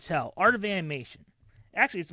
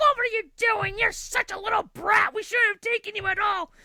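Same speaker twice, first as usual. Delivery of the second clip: shrill, very high screaming tirade. Retelling how the arguing couple screamed at each other: imitating people screaming. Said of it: "they're screaming and screaming".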